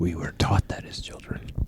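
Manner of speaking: soft, unvoiced whisper.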